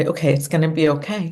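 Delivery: ordinary delivery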